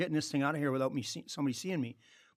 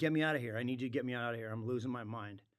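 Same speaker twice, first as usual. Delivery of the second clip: acted sobbing, panicked, hyperventilating crying voice; 3 semitones lower, 6 dB quieter than usual. Retelling a phone call begging him to come get you, retelling a crying plea. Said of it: "I was crying, I was hyperventilating".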